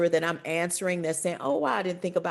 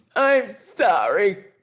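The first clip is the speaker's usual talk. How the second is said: mock crying, tearful voice, raised pitch; 2 semitones higher, 7 dB louder than usual. Retelling a seven-year-old's apology to his mother: imitating someone apologizing in tears. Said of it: "through tears and all".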